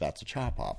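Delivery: very hushed, under-the-breath, very quiet mutter. Retelling what she said after rolling her eyes: imitating muttering under breath. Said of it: "rolled her eyes and said under her breath".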